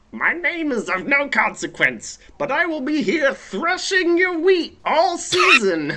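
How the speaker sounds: very high, squat little creature voice. While everyone is doing voices, a player introduces a squat little creature. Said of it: "a squat little person".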